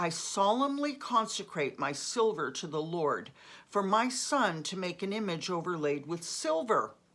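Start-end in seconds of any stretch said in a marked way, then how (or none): none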